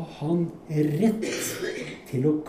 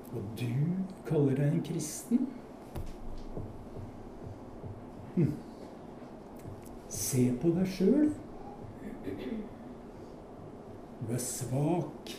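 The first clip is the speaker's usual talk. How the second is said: put-on mocking voice, much quieter than before; 9 dB quieter than usual. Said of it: "denne hånlige stemmen".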